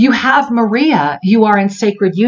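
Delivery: very soft-spoken, softest, most beautiful voice. Retelling what a figure in a vision said: imitating the softest, most beautiful voice. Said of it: "in the softest, most beautiful voice".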